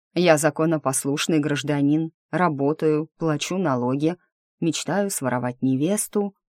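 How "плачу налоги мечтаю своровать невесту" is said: plain reading voice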